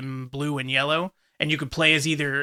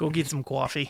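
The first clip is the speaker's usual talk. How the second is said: put-on Boston accent, said quieter; 4 dB quieter than usual. Friends joke about people pretending to have a Boston accent; fake Boston accent. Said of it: "pretend to have a Boston accent".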